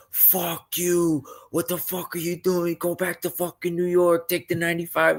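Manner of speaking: very high-pitched, shrill, harsh abusive screaming. Retelling grown men at a Jets-Dolphins game screaming at a child: imitating men screaming. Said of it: "grown-ass men screaming at me".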